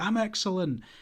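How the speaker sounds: stiff, put-on excitement. Retelling how the next interviewee answered: imitating forced enthusiasm. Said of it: "it was just very forced".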